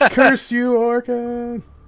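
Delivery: tiny, very high, squeaky dying-spider voice. The spider, dying, cries out, squeaky dying spider voice. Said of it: "makes this little squeaky dead spider sound".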